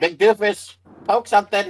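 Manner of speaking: shouting. Demi calls out to her companion before ducking behind him, shouting. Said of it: "She shouts".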